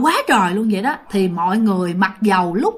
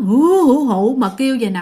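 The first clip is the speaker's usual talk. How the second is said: mournful, put-on ghostly wailing cry. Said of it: "Tiếng khóc thảm thiết dữ lắm".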